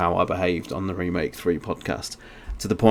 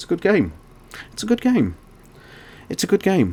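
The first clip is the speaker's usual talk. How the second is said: very high, swooping, repeated anguished cry; 12 semitones higher than usual. Remind Nick how he kept repeating himself during your slurred drunken rant, imitating Nick's anguished voice. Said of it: "you can literally hear the anguish in your voice".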